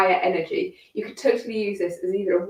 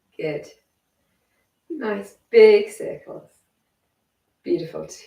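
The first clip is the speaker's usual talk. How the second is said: croaky, hoarse voice; 3 dB louder than usual. Guiding listeners through a movement exercise; croaky voice. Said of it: "Sorry about my croaky voice".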